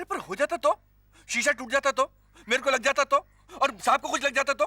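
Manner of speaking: yelling angrily. In a skit, a driver argues over children's cricket near the car, angry shouting. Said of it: "चिल्ला क्यों रहा है?".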